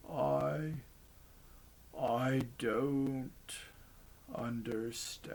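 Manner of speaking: soft, bewildered, very slow throaty mumble. Narrator reads the dying bear's last words after the fight: bewildered throaty mumble. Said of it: "it mumbled in its throaty voice".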